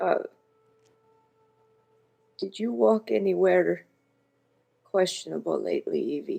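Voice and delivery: whispered in a put-on voice. Voicing a character mid-hug, asking a quiet question: whispering in character. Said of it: "Astrid's just gonna whisper".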